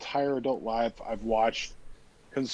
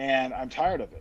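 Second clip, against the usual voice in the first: ordinary delivery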